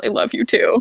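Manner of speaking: quietest, faint, barely audible near-silent voice. Voicing Cal replying with a kiss on the head: quietest voice. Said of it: "in the quietest voice".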